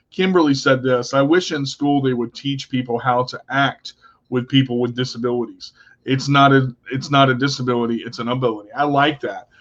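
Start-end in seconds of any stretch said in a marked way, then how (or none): none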